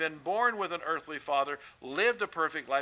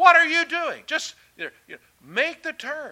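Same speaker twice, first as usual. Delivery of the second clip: very loud, high, shrill shrieking yell; 12 semitones higher, 10 dB louder than usual. Describing a habit with bad drivers, retelling yelling at bad drivers. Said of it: "I'm yelling at them".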